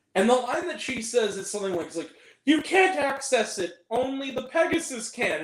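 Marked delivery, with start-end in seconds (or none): 2.5-5.5 slow, wooden, stilted, failed attempt at emotion. Mocking a woman's line from a terrible movie, imitating stilted emotional delivery. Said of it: "she talks like this".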